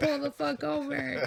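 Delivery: put-on high, rough yell. After another driver hits them, speaker recalls yelling at him, retelling own yelling. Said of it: "I'm like yelling at him".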